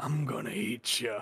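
dragged-out bear-like voice. Quoting the bear from a rewatched movie: Nick Nolte bear voice. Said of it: "Nick Nolte as the bear, like, just 'cause he's like".

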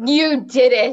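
loud, surging outburst bursting out. Urging Jade to say it again, louder, modeling it: from a full-body surge. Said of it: "Say it from that surge in your whole body".

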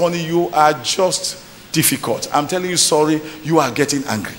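plain

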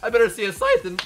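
hyped, excited voice cracking mid-line. Hyped while playing a game on stream, voice cracking. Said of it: "My voice cracked".

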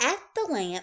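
ordinary delivery

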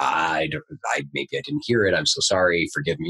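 stammering, halting, tripping over words. Retelling an apology to a master after being caught out: imitating own stammering apology. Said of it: "I stammered".

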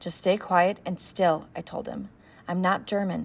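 plain reading voice

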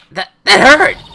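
high, loud yelp of pain.

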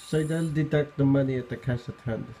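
put-on Filipino accent. Acting out a quoted scene line for viewers, in a Filipino accent. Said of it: "Filipino accent".

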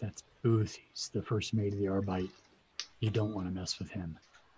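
very quiet, hushed, low murmur. Retelling a man's answer when asked who the newcomer is, very quiet voice. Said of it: "he says in a very quiet voice".

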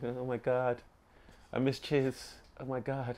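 put-on soft, squeaky cartoon girl voice. Mocking how the others sound to them, in a Betty Boop voice. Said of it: "Why'd you put on this Betty Boop voice?".

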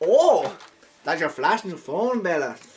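loud, slow, deliberate Scottish character voice. Voicing Hop in the game, reading his line: Hop voice in Scottish accent. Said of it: "Frick, that's Scottish".

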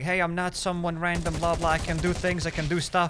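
ordinary delivery

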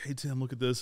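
soft, hushed whisper. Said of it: "Tim and I are whispering to each other".

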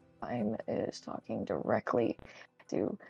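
low, hushed half-whisper. Commenting on characters talking directly to each other, half-whispering. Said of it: "Why are you whispering?".

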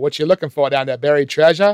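put-on poor Boston accent. Quoting a line the assistants say, in a bad boston accent. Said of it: "with a really sort of bad Boston accent".

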